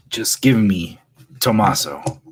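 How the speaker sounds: snarling, snarled delivery. Game master voices Frida confronting a player character, snarling as Frida. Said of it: "She snarls".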